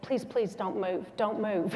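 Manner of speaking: ordinary talk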